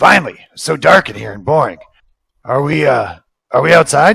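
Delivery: loud gruff voice. Narrating to Marnie, the storyteller voices what speaks from her bottle: gruff Watts voice. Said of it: "you hear the gruff voice".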